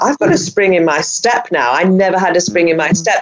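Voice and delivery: plain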